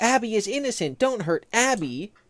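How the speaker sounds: yelling, pitched high. Describing what happens in the scene, imitating Vanessa yelling. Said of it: "Vanessa's just yelling like".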